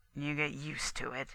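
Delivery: low, very quiet mutter under the breath. The hermit answers the narrator's remark that it is warm, muttered. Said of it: "he muttered".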